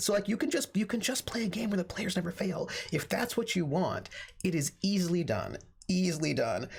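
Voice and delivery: plainly sarcastic, tongue-in-cheek delivery. A game master chatting with a fellow player, in a sarcastic voice. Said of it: "was that my sarcastic voice?".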